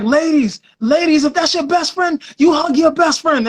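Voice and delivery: put-on high Jamaican DJ mic voice with Jamaican accent. Retelling the DJ on the microphone giving the crowd instructions, in a Jamaican DJ voice. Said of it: "giving instructions like Jamaican D Js".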